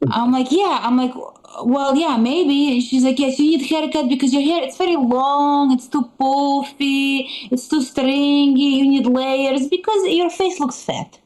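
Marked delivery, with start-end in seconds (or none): 3.2-11.1 put-on Eastern European accent. Quoting what Mom told you in conversation, Eastern European accent. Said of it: "That's the accent".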